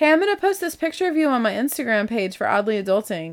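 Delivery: playful, joking, teasing ribbing tone. Speaker recounts joking to him while they watched a show, retelling a joking line. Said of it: "And so I said jokingly".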